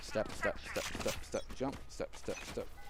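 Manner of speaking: soft, whispered, mouthed footstep sound effects.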